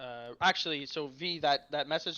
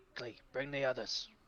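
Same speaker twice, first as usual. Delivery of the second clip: hushed whisper; 3 dB quieter than usual. Whispering a warning to the party in character: whispering. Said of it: "I would whisper".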